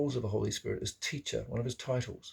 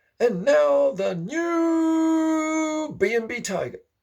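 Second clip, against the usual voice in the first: very high, very slow, ramped-up announcer call; 9 dB louder than usual. Retelling what a male voice announced, in a drawn-out announcer voice. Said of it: "I heard a male voice like an announcer".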